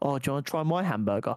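put-on, mock-sultry voice. Retelling what the other auntie said about her hamburger, imitating a sultry voice. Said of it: "she said it like quite a sultry voice".

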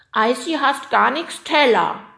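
high, very loud, defiant sulky grumble. A hungry yeti speaks up: sulky grumbling. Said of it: "maulte der Jeti und schob trotzig seine Unterlippe vor".

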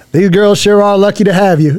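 put-on heavy Alabama accent, laid on. Retelling what the girls' biological dad said at school: imitating Blake's thick Alabama accent. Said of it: "He's got a real thick accent".

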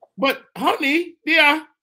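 put-on British accent. Acting out a movie love scene with a puppet: British accent. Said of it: "that needs a British accent".

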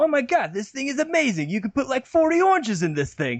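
exaggerated New Jersey accent. Retelling a bragging man's words, in a super New Jersey accent. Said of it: "super New Jersey accents".

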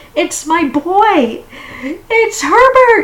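very loud, very high, desperate crying out. A mother's husband grabs her arm at the door, and she cries out while struggling. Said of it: "she cried".

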